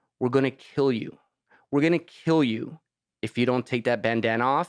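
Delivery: put-on very calm, composed, menacing tone. Retelling how gangsters stopped him and threatened him, retelling a calm threat. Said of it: "very calmly, they said it like this".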